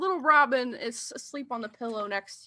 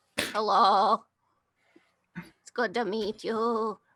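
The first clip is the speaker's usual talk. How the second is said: put-on old woman voice.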